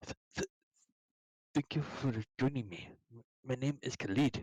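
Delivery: stammering, stumbling on the opening th- of "thank". Narrating the half-elf Khalid greeting the adventurers, Khalid stuttering. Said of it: "he stutters".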